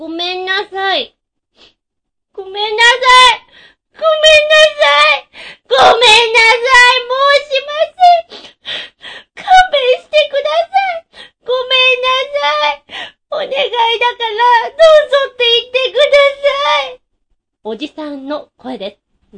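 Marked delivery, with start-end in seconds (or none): 0.0-17.0 very high, weeping, pleading voice. Voicing a character begging at a door to be let in: crying while apologizing. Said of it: "家の前で泣いて謝ってる人は".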